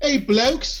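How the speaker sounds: put-on British accent. Mocking whoever greets people as blokes, in a put-on British accent. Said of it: "Don't do the voice".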